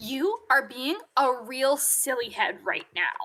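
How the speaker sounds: acted, snotty, bitchy, condescending, talking-down tone. Retelling what a librarian said to a child, Izzy, mimicking a bitchy tone. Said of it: "said with the bitchiest tone of voice".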